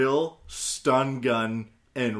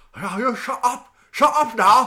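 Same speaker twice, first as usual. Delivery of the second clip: put-on Chinese accent, very high-pitched; 12 semitones higher, 8 dB louder than usual. Imitating the neighbors, in a chinese accent. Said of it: "What's the Chinese?".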